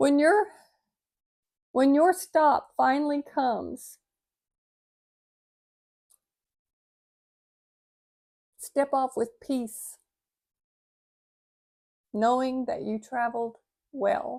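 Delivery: choked-up voice catching with emotion. Reading a passage aloud from their own pad, choked up. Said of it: "I'm getting choked up".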